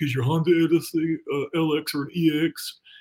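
slow, dim clerk voice. Reading a sponsor ad, voicing the person behind the counter, dumb counter guy voice. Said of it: "I don't know why I do that voice every time".

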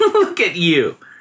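playful teasing. Narrator reads the girl's companions discovering her secret and teasing her; teasing. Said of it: "they teased the girl".

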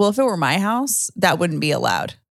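plain

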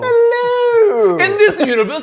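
very high, awful put-on British accent. In a comedy bit after the portal closes, greeting everyone: bad British accent. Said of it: "I have a bad British accent".

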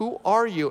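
put-on choked-up, tearful, crying, breaking-down voice. Retelling a stranger's tearful question in a car: imitating someone crying. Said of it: "this guy starts breaking down, crying".

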